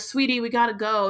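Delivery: ordinary delivery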